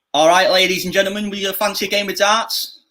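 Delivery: Manchester accent, pitched very high. Doing accents on request, asked for a Mancunian one, Mancunian accent. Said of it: "give me a Mancunian one, Manchester".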